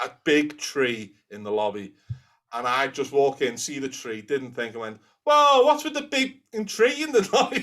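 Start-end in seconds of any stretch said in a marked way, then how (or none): 5.2-7.6 put-on strong Scouse accent, loud, very high, blurted out. Retelling walking in and seeing a big tree in the lobby: very loud scouse. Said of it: "Very loud, very scout".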